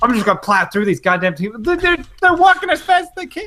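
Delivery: put-on high, rising angry rant. Retelling a mother's angry words while driving: imitating an angry driver. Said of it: "she gets real angry driving".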